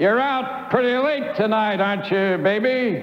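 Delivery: contemptuous, sneering, jeering. One of five tough boys blocking her way to the gate speaks, with a sneer. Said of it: "with a sneer".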